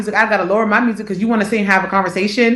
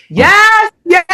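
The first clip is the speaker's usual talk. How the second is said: put-on yell, very high pitched; 11 semitones higher, 5 dB louder than usual. Imitating a mother yelling into the phone during a road trip: imitating mom yelling on phone. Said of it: "sitting there yelling".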